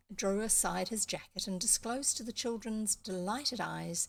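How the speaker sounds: usual speaking voice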